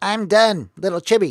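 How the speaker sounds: put-on said with an American accent. Showing listeners your own version of a character who says he's done, in an American Chibi voice. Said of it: "That's my American Chibi voice".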